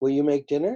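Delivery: upward lilt at the end, on dinner. Explaining how a question mark sounds, demonstrating rising question intonation. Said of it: "an upward lip lilt".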